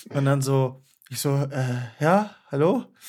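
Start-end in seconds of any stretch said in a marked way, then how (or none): 2.0-2.8 scared, timid, high-pitched voice. Retelling an unexpected morning phone call, imitating own scared phone answer. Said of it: "richtig Angst bekommen".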